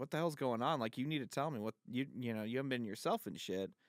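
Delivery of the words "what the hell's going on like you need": usual speaking voice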